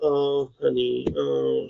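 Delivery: play-acted, sing-song, doting, fussing baby talk. Retelling how the wife treats her like a baby girl: imitating wife babying the dog. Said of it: "treats her like a little baby girl".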